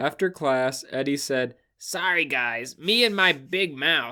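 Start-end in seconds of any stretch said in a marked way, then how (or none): 1.8-4.1 acted gruff, whining voice. Reading a book line aloud, trying the Eddie voice. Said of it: "do Eddie's voice".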